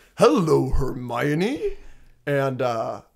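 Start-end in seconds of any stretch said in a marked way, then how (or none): 0.2-1.8 animated sing-song character voice, pitch swinging wide on "hello". Retelling a movie scene, saying the line along with it: Hagrid voice. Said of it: "he walks up to her and he goes".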